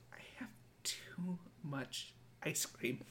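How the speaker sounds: put-on broken voice. Retelling a sleepy friend's words in the car: imitating a defeated, broken voice. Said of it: "just broken in a way that I had not seen".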